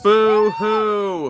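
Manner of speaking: high, loud fake sobbing with drawn-out hoo. Mocking upset people in footage: mock crying. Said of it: "they're horrified by all this".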